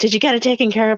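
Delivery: impatient, rude, rushed, demanding tone. Retelling a husband calling his wife on the phone, retelling a rude man yelling. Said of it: "he's yelling at her".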